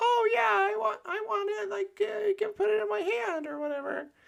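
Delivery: voice shifted way up, very high. Speaker mocking how someone retells conversations, imitating Michelle, super high voice. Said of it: "pitch shift his voice super high".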